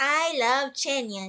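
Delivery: plain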